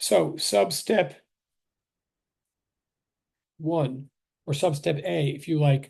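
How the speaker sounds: very slow, careful, deliberate step-by-step wording. Re-explaining the same method as last time for a new case: slower speech. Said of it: "try to say it a little bit slower this time".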